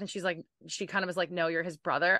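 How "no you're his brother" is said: ordinary talk, nothing marked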